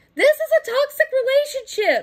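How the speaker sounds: pitch rising, high, loud, impassioned outburst.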